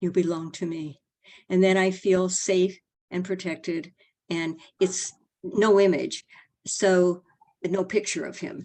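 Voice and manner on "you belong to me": quiet, calm voice. Describing a voice heard over and over, retelling a quiet, calm voice. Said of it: "Just quiet, calm".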